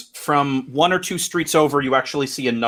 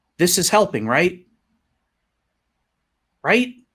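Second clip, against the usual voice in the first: put-on high-pitched young girl's voice; 5 semitones higher than usual. The game master voices a girl heard in a player's head, girl's voice. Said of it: "You hear a girl's voice in your head".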